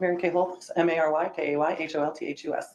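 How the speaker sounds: letters rattled off in a rapid-fire rush. A sworn witness states and spells her name for the record, very fast. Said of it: "She said that really fast".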